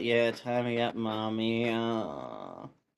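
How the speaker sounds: very slow, low mumble under the breath. Voicing the one being tied up as he is tied: mumbling. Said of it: "you hear him mumble".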